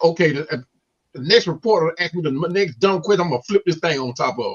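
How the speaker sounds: ordinary talk, nothing marked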